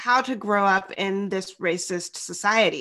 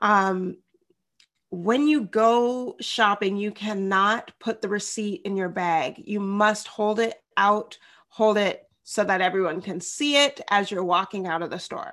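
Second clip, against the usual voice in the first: usual speaking voice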